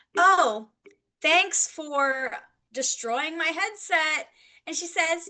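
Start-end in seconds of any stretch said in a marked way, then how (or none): 0.2-4.3 put-on heavy sarcasm, slow, words dragged out. Retelling a line from earlier today: retelling own sarcastic shout. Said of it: "I sarcastically shouted".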